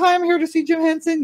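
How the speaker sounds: small, tiny, very high little voice. Retelling walking into the studio to ask for someone: imitating own past little voice. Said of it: "I had a little voice".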